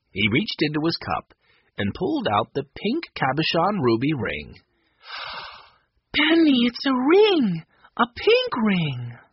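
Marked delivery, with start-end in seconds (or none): 6.2-9.2 very high, stretched-out, drawn-out crying out. A narrator reads Violet's line as she sees the prize Benny found, crying out. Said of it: "Violet cried".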